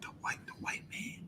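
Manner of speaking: whispered, hesitant, unsure hushed tone. Describing people too scared to say it aloud: imitating people whispering. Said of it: "they'll whisper it".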